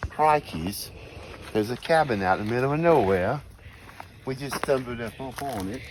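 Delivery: bad put-on Australian accent. Finding a cabin in the woods: terrible australian accent. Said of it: "your accent's terrible".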